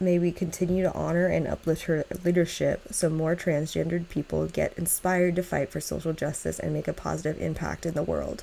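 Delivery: ordinary delivery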